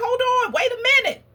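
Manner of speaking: high, protesting, kicking-and-screaming cry. Acting out a son being bound on an altar, imitating Isaac screaming in protest. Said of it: "his son was probably kicking and screaming like".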